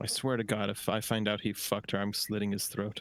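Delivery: said under one's breath. Playing a character who turns away from the party, muttered under breath. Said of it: "like kind of under my breath".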